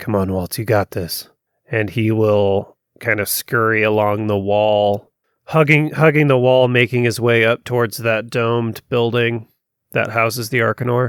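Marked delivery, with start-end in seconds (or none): 0.0-1.3 muttered in a lower voice. Narrating a scene where Dax urges Waltz on, muttering under his breath. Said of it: "kind of under his breath".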